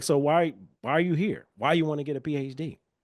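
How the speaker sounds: mock derogatory, demeaning tone. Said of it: "In the most derogatory way possible".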